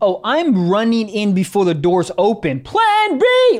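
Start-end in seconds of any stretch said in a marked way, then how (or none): 2.6-3.6 yelled in a very high, desperate voice. Acting out running into a store before the doors open: pretend yelling.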